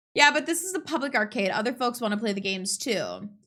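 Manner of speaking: normal talking voice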